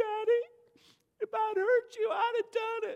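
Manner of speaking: very high, trembling, quivering pleading voice. A father acts out his daughter's reply after being told to wash clothes: mock quivering-lip plea. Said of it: "she's going to go the quivering lip".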